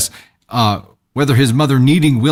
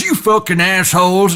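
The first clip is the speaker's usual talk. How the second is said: mock-angry shout, much higher; 7 semitones higher than usual. Retelling how a guy stood up and stormed out, retelling an angry shout.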